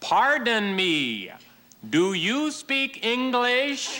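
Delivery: high, slow American lady tourist voice.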